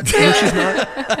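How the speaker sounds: high, slow, laughing delivery.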